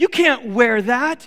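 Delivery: slow, loud near-yell, scolding tone.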